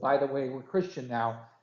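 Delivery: plain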